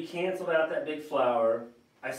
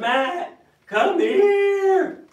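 very loud, very high, drawn-out calling voice; 10 dB louder than usual. Retelling how she calls him from the other room: really loud call. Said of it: "It's more of it's a really loud voice that says".

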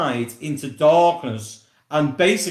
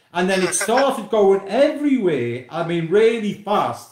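plain

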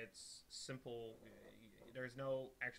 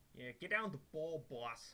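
rough, put-on typical New Jersey accent; 4 semitones higher than usual. While letting something load on stream, tries a typical New Jersey accent. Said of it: "Can't really do that typical New Jersey accent".

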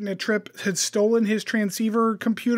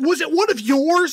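put-on feeble, weak, unintimidating raised yell; 6 semitones higher, 5 dB louder than usual. Retelling a bad line reading from the show: imitating an unintimidating yell. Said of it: "yells it in this really not intimidating way".

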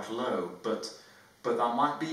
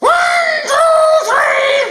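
booming, full-force, very loud, high shout; 19 dB louder than usual. Elliot counts to three while pushing against the presenter, very loud. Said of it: "It would be loud".

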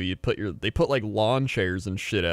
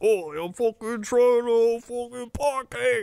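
very high-pitched, put-on British accent, male voice. Acting out a buddy-comedy bit of a British guy and a New York guy, imitating a British guy. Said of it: "your British guy".

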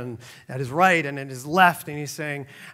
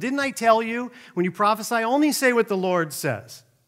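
furious, pitched-up angry yell; 7 semitones higher than usual. Retelling the king's reply to the prophet: imitating a king yelling. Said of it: "Ahab yells at him".

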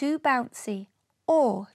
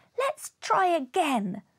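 eager, exclaiming voice; 4 semitones higher than usual. Flora, after Uncle Midge puts the creature back in the bangle, exclaiming. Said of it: "Flora exclaimed".

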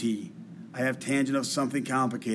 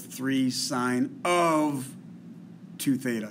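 the word of given weight. Reading a differentiation example out loud: stress on of. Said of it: "I'm emphasizing the word of".

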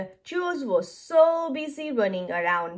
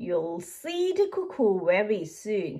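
ordinary delivery, nothing marked

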